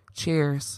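put-on droll, flat, unenthusiastic monotone delivery. Recounting how someone said cheers, imitating a flat monotone cheers. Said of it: "a monotone cheers. It wasn't as enthusiastic as I just said. ... very droll".

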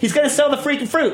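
high, exasperated rant, thrown up in disbelief.

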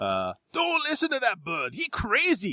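put-on strong Chinese accent, very high and slow. Telling a story, an old man calls out in a strong chinese accent. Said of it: "a very strongly accented Chinese voice".

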